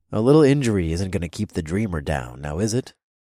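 plain reading voice

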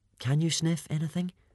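hopeful half-whisper, slightly high. A narrator reads a character asking a dragon a question, hopeful half-whisper. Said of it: "whispered Hiccup, hopefully".

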